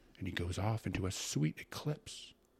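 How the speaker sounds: plain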